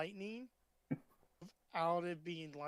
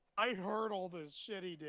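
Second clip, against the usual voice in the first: ordinary talk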